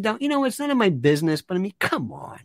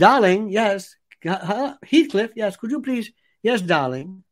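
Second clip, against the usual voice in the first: put-on Mid-Atlantic transatlantic accent. Demonstrating the accent heard in the days of game shows: Mid-Atlantic accent. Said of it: "It's called the Mid-Atlantic accent".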